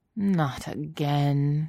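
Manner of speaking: muttering. Narrator reads Obi-Wan's reaction to his former Padawan leaving the hangar, muttered. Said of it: "he muttered".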